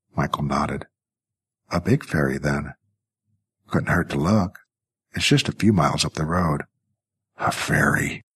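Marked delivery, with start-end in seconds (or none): 7.4-8.2 muttered, mumbled. Narrator reads Jackie answering Michael's ferry suggestion, muttered. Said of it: "muttered Jackie".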